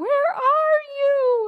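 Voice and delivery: put-on very high child's cry. Retelling the boy clinging to the wall calling his mother: imitating a child crying out. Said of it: "crying out for his mother".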